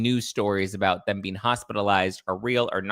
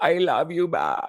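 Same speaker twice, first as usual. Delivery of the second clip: slow, drawn-out, put-on Spanish accent; 7 semitones higher than usual.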